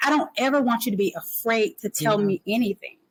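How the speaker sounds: plain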